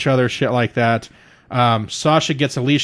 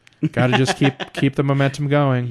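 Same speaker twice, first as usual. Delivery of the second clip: flat, monotone commentary voice. Retelling a wrestling commentator's words at the match's end: imitating Bayley's monotone commentary. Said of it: "so just, like, monotone".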